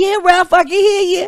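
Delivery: put-on very high old lady voice. Retelling a man's talk with his mother, old lady voice. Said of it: "you hear old lady like".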